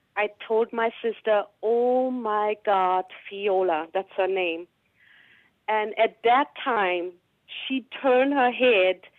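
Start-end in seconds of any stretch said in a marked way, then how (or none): 1.7-3.9 very, very low voice, very slow. Retelling what they said to their sister viola: very, very low voice. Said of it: "I said with a very, very low voice".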